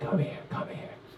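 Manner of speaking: very hushed, raspy mob-boss whisper. Retelling what the mom said after the ventilator: Don Corleone voice. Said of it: "She's like Don Corleone".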